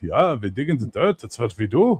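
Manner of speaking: German-accented mountain dwarf voice. Describing the mountain dwarves of the speaker's own fantasy setting, Germanic dwarf accent. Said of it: "mountain dwarves are Germanic".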